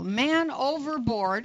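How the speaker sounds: ordinary delivery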